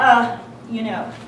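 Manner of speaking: low, quiet, distracted, indifferent voice. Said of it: "He goes".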